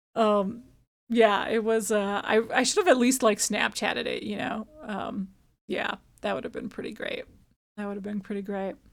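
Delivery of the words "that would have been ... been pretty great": very quiet, quick, weary, creaky vocal fry. Chatting about not having filmed a moment, in tired vocal fry. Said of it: "my vocal fry is uh, becoming more and more difficult to not do".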